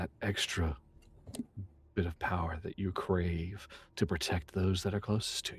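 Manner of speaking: whispered voice. A game master voices a whisper calling to a player, familiar whisper calling out. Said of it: "this familiar sounding whisper is calling to you".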